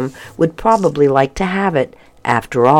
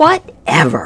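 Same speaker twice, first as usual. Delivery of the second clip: grumbled, grumbling voice. Lorelei answers Hercules's correction, grumbling. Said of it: "Lorelei grumbled".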